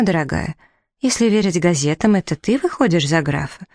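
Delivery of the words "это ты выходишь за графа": ordinary delivery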